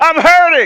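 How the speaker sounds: loud shout. Leading a congregation to say it louder: shouting. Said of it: "Come on, shout".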